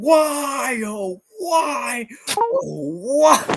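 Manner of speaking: very high, very slow upset yell, "why" stretched. Recalling a video clip, imitating Markiplier yelling. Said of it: "he's yelling".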